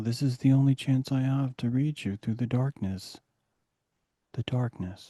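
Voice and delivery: intimate, soft public-radio announcer voice. Explaining why radio hosts talk the way they do, in an NPR host voice. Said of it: "They naturally talk this way on N P R".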